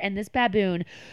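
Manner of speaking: ordinary talk, nothing marked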